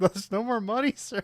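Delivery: mock very high voice, right on the verge of tears. Retelling what she says when there's no more money: imitating someone almost crying. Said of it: "she's almost, like, just crying here".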